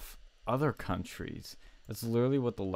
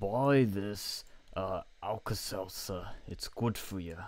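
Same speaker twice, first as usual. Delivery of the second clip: every word dragged out, badly. Imagining a medication ad voiceover: Bernie Sanders impression. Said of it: "Can't do a good impression".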